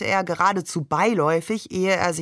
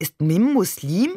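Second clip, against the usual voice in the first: ordinary delivery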